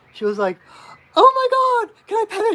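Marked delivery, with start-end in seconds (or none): 1.1-2.5 very high, loud, thrilled excited squeal. Retelling what a woman asked about the drum bag: imitating excited voice. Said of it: "got so excited".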